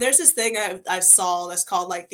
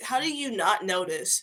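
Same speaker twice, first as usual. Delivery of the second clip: ordinary talk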